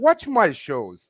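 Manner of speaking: put-on Italian accent, high and loud. Speaker acts out what he will say to his wife, with an italian accent. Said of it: "with an Italian accent also".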